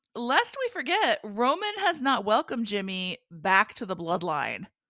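ordinary talk

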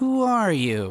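slightly drawn out, deliberate. Game master voicing a character asking the player again, a little slower. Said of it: "he says a little bit slower this time".

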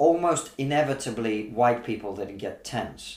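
ordinary delivery

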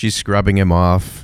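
ordinary delivery

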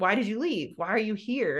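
plain

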